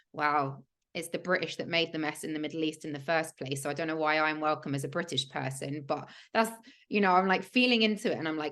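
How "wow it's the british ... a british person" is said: ordinary talk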